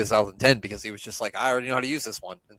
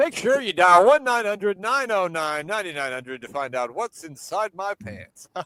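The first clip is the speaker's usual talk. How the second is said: put-on ring announcer delivery, pitched up; 8 semitones higher than usual. Act out a man using his announcer voice on her, imitating his announcer voice. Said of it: "his announcer voice too".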